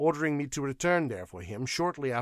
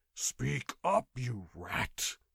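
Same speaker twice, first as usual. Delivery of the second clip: growled, menacing; 2 semitones lower than usual. A narrator reads a man demanding answers from a clerk he is half-strangling, growled. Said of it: "he growled".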